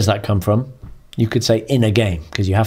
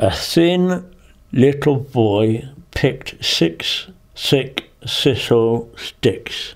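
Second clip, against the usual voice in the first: talking around a pencil clenched between the teeth; 4 semitones higher than usual. Diction exercise, repeating a tongue twister: with a pencil between the teeth. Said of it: "Pencil between the teeth".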